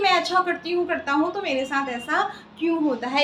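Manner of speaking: ordinary talk, nothing marked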